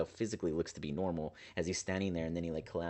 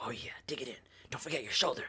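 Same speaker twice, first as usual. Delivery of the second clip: mocking, gloating, pitched up; 6 semitones higher than usual. Voicing Zephyr, who pesters the party as they pat on dust: mocking Zephyr voice. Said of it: "mocking you".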